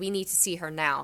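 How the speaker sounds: imitated stern tone. Retelling demanding to see a child, imitating own stern tone. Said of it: "so I'm talking to her stern".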